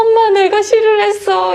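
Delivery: put-on high, loud, wailing crying small-child voice.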